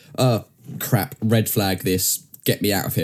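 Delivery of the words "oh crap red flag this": ordinary delivery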